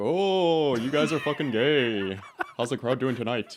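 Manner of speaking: very loud stand-up comic shout, belted, stretched oh. Doing a quick stand-up bit to another speaker: Robin Williams impression. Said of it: "that's a good impression".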